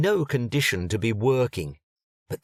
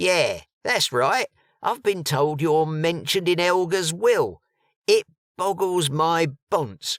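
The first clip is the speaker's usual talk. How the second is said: put-on East London accent, pitched up; 6 semitones higher than usual. Reading a story aloud, a character confirms a name and replies: East London accent. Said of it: "an East London accent tweaked his ugly ears".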